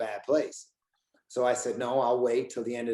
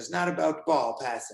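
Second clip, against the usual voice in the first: acted yelling, higher; 4 semitones higher than usual. Retelling a freezing practice, screaming at the coach: retelling his own screaming. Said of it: "I just started screaming at".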